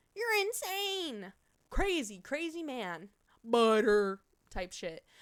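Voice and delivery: midwestern-sounding speech. Reacting to someone who paid 20 bits, in a midwestern accent. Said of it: "I sound so Midwestern when I say that".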